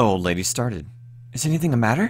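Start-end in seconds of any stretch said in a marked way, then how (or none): 1.3-2.1 very high, breathless, out-of-breath voice. Reading an old lady asking a visitor whether anything is wrong: breathless question. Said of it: "she asked breathlessly".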